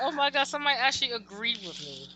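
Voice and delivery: ordinary talk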